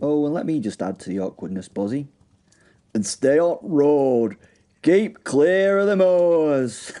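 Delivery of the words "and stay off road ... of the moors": thick, exaggerated Yorkshire accent, very drawn out and slow. Mocking film dialogue while warning the guests: exaggerated yorkshire accent. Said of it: "in his most Yorkshire accent".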